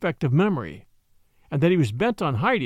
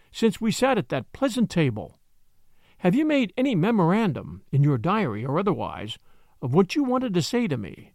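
ordinary delivery

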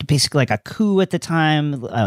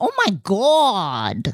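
put-on Long Island accent, swooping, "God" drawn out long; 6 semitones higher than usual. Imitating something she often says, in a Long Island accent. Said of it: "when the Long Island really jumps out".

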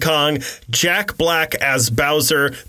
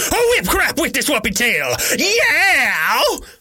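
high, animated voice with pitch swooping all over; 10 semitones higher than usual.

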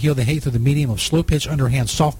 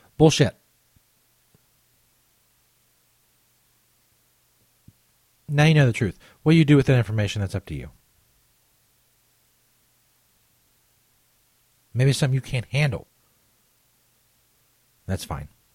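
sounding very angry. A podcast host addresses listeners, sounding very angry. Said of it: "I sound very angry".

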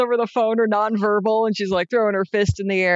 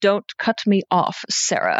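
creepy voice with mannered vocal affectations; 3 semitones lower than usual. Retelling a casting director's phone call: imitating creepy casting director's affected voice. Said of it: "I love his vocal affectations".

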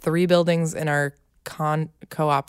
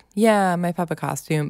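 mock indifferent, unenthusiastic child voice. Retelling a child's reaction to her costume on Halloween: imitating Maven sounding indifferent. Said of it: "a little indifferent to the costume".

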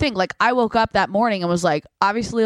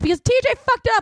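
put-on, very high, drunken shriek; 14 semitones higher than usual. Retelling screaming at his buddy passed out in the band van, retelling a drunk yell. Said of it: "why are you yelling?".

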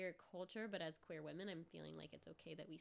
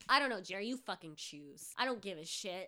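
put-on angry voice, louder; 8 dB louder than usual. Acting out an imagined angry mom who removed soup labels: imitating an angry mom. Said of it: "an angry mom would do".

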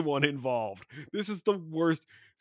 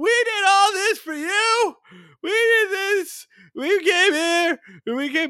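mock screech, higher, louder, slower; 5 dB louder than usual. Recounting the picnic fight, the speaker acts out the girls: imitating drunk girl's screech. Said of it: "The girls scream back".

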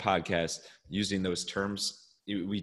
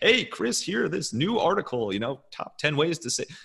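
loud, very high promo announcer voice; 9 semitones higher, 6 dB louder than usual. Explaining radio voices, demonstrating the promotional announcer voice. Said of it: "what i call the announcer voice".

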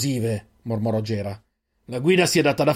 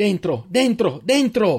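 high-pitched, repeated shouting; 8 semitones higher than usual. After a companion is taken, a member of the group is shouting. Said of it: "urlò Eirin".

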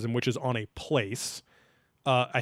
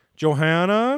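put-on eerie, creepy, high, raised calling voice; 6 semitones higher, 7 dB louder than usual. Retelling how Nick called a name: imitating Nick calling creepily. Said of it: "very creepily, is like".

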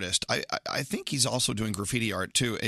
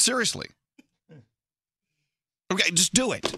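shouting, pitched higher; 7 semitones higher than usual. Urging listeners to follow an Instagram account: yelling. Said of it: "Why are you yelling?".

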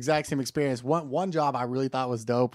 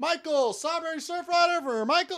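mock, very high, hollered call-out. Retelling how they called out a drink order: imitating own yelling. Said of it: "that dude doesn't do shit but yell".

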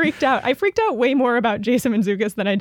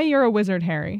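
usual speaking voice

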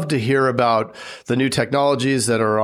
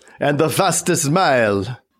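put-on old vampire count voice; 2 semitones higher than usual. Putting the next question in a list to the other person, in a Dracula impression. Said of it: "That was my Dracula impression".

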